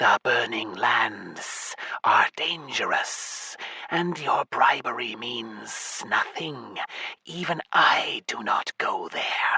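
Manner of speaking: sibilant hissing snake voice, every word hissed. Narrator voices the snake Apophis answering a plea, hissing. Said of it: "the snake hissed".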